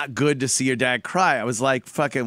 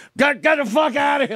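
mock mad, stammering, very high, angry outburst; 13 semitones higher, 3 dB louder than usual. Retelling how a burnt father snapped at his son: imitating an angry yell. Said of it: "he got all mad at me".

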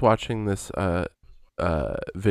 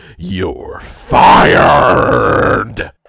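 loud, rough barking voice; 13 dB louder than usual. Doing an impression after being asked to: Vince McMahon impression. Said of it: "let's see this Vince McMahon".

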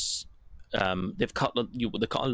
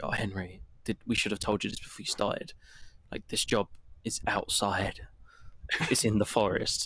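put-on serious voice. Retelling what Delilah says to Henry about the job: imitating Delilah's serious tone. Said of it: "it starts off very serious sounding".

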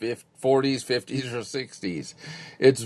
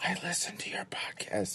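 hushed, secretive, confiding whisper, barely voiced; 6 semitones higher, 13 dB quieter than usual. Retelling how people tell them they listen to the podcast: imitating someone whispering.

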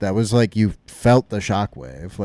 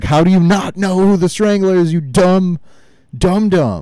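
loud, shrill, high-pitched, furious rage scream; 10 semitones higher, 6 dB louder than usual. Quoting a man furious at being called the Strangler, imitating furious screaming. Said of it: "because he's so pissed off".

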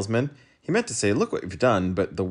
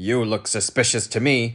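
accusing, accusatory tone. A policeman points at the humbug and addresses him, accusing. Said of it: "pointing an accusing finger".

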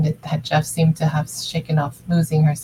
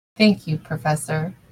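dry, understated delivery. Annie thanks Jeff, calling him Professor, dryly. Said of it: "she said dryly".

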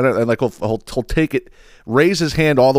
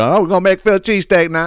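pitched-up put-on cooking-video host announcer voice; 6 semitones higher than usual. Retelling a cooking reel's opening line: imitating the reel cook's voice. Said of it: "his voice could be confusing".

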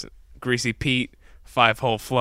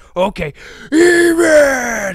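shrill, very loud, high yell with drawn-out word; 10 dB louder than usual. Recounting a man at a campsite who starts going off, imitating someone yelling. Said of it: "And just starts going off".

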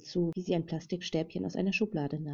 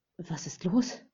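worried, fearful, anxious, urgent tone. Narrator reads a woman rushing to a pale-faced man: anxious question. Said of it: "verlangte sie ängstlich von ihm zu wissen".

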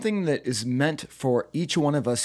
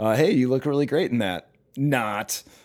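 mocking sarcastic delivery. Showing how people used to deliver a fake compliment, sarcastic. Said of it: "you'd like sarcastic".

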